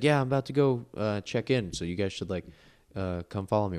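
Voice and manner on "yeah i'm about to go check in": ordinary delivery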